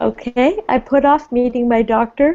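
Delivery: yawning while speaking. Teacher repeating a student's answer in class, yawning while speaking. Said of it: "I keep yawning".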